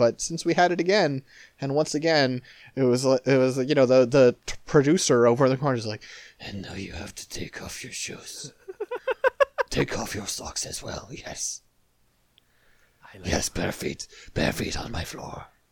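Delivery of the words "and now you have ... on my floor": lecherous put-on old-man voice, much lower. Retelling what a producer in the corner said, in a horny old man voice. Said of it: "you're incredible at sounding like a horny old man".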